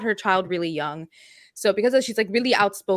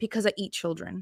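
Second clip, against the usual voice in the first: put-on deadpan voice, quieter; 9 dB quieter than usual. Retelling a friend's answer to a child's rude question: imitating a deadpan reply. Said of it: "turns to her with this deadpan face and goes".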